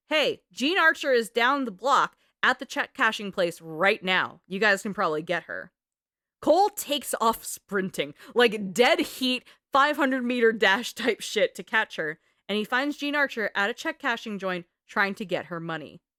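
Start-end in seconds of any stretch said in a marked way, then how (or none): none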